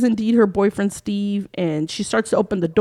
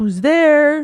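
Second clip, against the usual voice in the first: high, play-acted, terrified scream; 6 semitones higher, 4 dB louder than usual. Retelling a movie scene where the woman screams: imitating someone screaming. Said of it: "she's screaming out".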